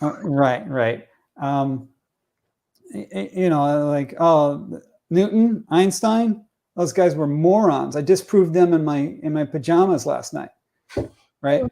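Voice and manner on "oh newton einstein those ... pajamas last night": normal talking voice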